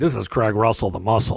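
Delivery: big, slow radio announcer voice. Mimicking how someone sounds on the radio, Craig Russell radio voice. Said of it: "You're on the radio, you're like".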